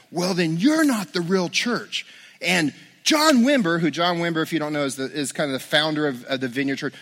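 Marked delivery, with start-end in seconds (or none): 0.1-2.0 heated, confrontational, angry yelling. Retelling how an upset visitor yelled at the speaker: imitating someone yelling. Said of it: "he starts yelling at me".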